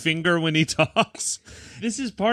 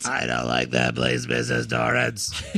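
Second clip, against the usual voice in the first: very low, robotic, rough rasping croak. Joining the bit imitating Tony: Tony voice, smoker with robot throat. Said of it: "I smoked for a million years and now I have a robot in my throat".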